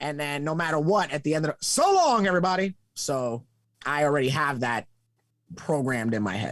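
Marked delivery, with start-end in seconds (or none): 1.6-2.7 put-on pitched-up, vintage old-school announcer voice. Retelling how announcers closed at the end: old-school announcer voice. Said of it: "back in the day, it was always".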